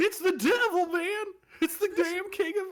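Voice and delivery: very high, loud, half-failed cartoon accent. Joking about a shaggy gang member, attempting a Shaggy accent. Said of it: "I can't do a shaggy accent".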